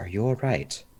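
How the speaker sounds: hushed, whispered voice. A character puts a hand on her shoulder and checks on her, whispering. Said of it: "and just whisper to her".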